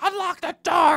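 acted, shrill, very high bloody-murder scream. Retelling an argument she witnessed, imitating someone screaming. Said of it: "she's just screaming bloody murder".

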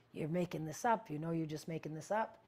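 normal talking voice

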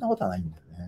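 sudden low, soft, fast, hushed murmur. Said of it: "なんで急に小声なんですか？".

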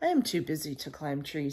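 plain

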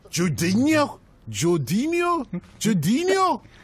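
mock accent mixing Nigerian and Geordie sounds.

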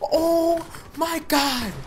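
high, slow, drawn-out screaming.

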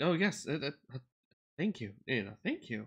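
thankful, grateful servant-like voice.

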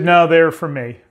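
put-on cold, unloving tone. Retelling a store worker's reply about the flowers: imitating an unloving tone. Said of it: "And that's how she said it".

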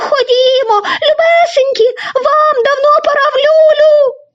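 high, trembling, quavering voice calling out. A canary calls her little ones home for bed; trembling voice. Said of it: "тремтячим голосом почала скликати".

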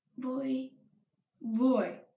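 plain

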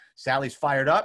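ordinary delivery

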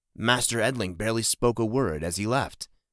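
ordinary delivery

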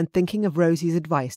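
ordinary delivery

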